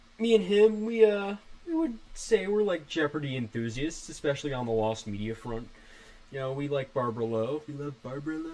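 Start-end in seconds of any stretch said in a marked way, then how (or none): 7.7-8.5 sly, sneaky put-on voice. Describing a Jeopardy fan partnership, in a sneaky Miles voice. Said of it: "I'm saying that in a sneaky Miles voice".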